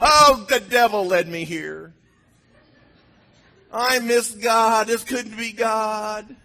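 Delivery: mock very slow, high whine, "God" drawn out. Retelling own past complaint to God: imitating own past whining. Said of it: "I just whined".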